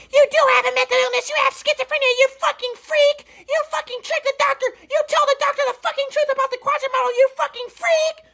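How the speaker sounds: mock very high-pitched, vicious screaming rant. Retelling a talk with mom, imitating mom screaming. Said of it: "Screaming at me".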